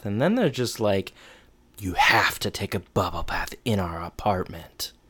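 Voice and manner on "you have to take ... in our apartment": eerie, off-putting, creepy and unsettling delivery. Retelling a line from a show: imitating a creepy tone. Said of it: "That was so creepy, what you just said that way".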